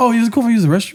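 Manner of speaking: put-on way-too-excited voice. Retelling how you asked to use the restroom, mock way-too-excited asking. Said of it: "way too excited".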